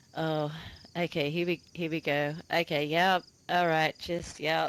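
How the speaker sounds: flat, slow, unimpressed deadpan. Retelling a veteran player's reaction to being shot: imitating a deadpan voice. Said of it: "he had this deadpan voice".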